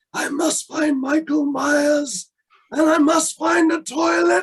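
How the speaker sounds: booming, shrill voice, loud, high and drawn out. Doing a Halloween movie impression for the host: Donald Pleasence impression. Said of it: "I've gotta do my Donald Pleasance im-, impression".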